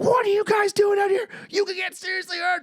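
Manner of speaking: very high, shrill scolding yell. Retelling how a woman came up and yelled at them: retelling a yell. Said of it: "Stop yelling at me".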